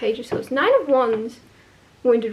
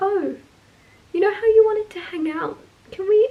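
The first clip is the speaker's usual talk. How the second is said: shy, hesitant, timid voice, pitched up; 8 semitones higher than usual. Giving a Taurus reading, acting out someone asking to hang out, acting a timid voice. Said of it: "notice I'm trying to talk with a timid voice".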